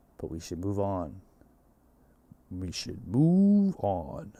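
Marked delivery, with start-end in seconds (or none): 2.5-4.2 very slow, swooping nineties movie-trailer narrator voice. Show host repeats his line to move on in his best movie trailer guy voice. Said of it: "That's like my best movie guy voice".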